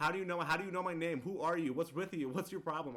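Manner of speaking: furious, loud, high-pitched angry yelling tirade. Retelling a movie scene where a character curses someone out: imitating a character yelling. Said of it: "So he's yelling, cursing at him".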